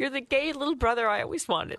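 crying through the words. Saying goodbye to a former producer who is leaving the show, crying. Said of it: "I don't know why I'm crying".

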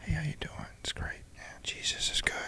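soft, unvoiced, put-on whisper.

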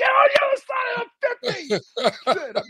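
very high-pitched, swooping scream. Speaker retells screaming at the coach before a game: reenacting own screaming. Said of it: "And I'm screaming at him".

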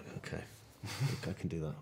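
mock unenthusiastic, reluctant tone. Retelling agreeing when told not to have a beard, mock-reluctant agreement. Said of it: "You don't sound very happy about".

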